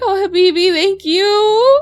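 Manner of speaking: tearful, slightly crying voice. Voicing a character healed after gasping for air: tearful thanks. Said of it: "And she starts to cry a little bit".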